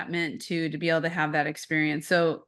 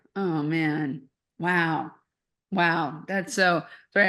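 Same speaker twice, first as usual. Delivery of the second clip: emotional, choked-up voice, slow words. Reacting after listening to someone's story, a little choked up. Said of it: "I'm getting a little choked up here".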